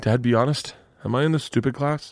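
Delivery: tearful voice, holding back tears. Retelling a daughter asking to be told honestly, imitating her holding back tears. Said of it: "she's holding the tears in her eyes".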